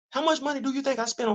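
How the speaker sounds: high-pitched voice. Quizzing the listeners, in a high-pitched voice. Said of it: "You see how high my voice is".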